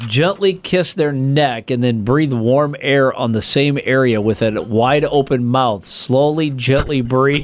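normal talking voice

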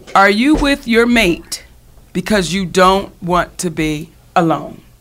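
very slow, deliberate, drawn out, every word spelled out. Host announcing today's topic to listeners, said really slowly. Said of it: "I'm going to say it really slow".

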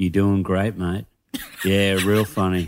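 put-on muttering under the breath. Retelling a heckler near the front of the crowd; retelling a mutter under breath. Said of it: "said under their breath".

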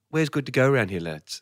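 quick, casual, natural everyday voice, rattled off. Recounting a star dropping his Borat act after an interview, Sacha Baron Cohen impression. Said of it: "goes back to Sacha Baron Cohen".

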